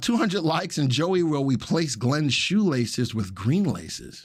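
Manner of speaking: ordinary delivery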